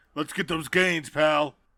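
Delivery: loud, booming wrestling star voice. Imagining a gym scene with Sonic: Dwayne Johnson voice. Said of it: "there's Dwayne "The Rock" Johnson".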